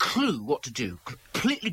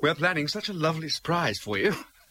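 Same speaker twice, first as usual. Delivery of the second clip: ordinary delivery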